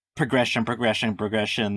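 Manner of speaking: usual speaking voice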